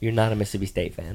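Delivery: plain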